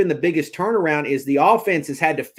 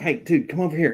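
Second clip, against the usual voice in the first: put-on whispering; 3 dB quieter than usual. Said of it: "whispering and shit".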